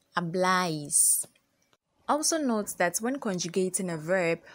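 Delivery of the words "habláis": louder stressed bláis in habláis. Spanish lesson on vosotros verb forms: stress on the syllable bláis. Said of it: "there is always an accent on the a, and so you pronounce that syllable louder".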